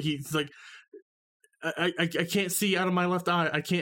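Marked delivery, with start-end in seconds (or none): 1.6-3.8 mock blubbering, higher. Retelling what a man hit in the eye said, imitating someone blubbering. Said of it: "he's blubbering at this point".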